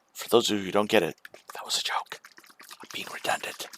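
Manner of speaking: whispering voice. Explaining a joke while playing a card game: whispering. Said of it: "I'm also whispering".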